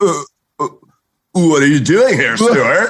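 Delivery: California sketch character voice. Recalling a Saturday Night Live California skit: Fred Armisen SNL California skit voice. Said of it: "Saturday Night Live skits with, like, Fred Armisen, where he's like".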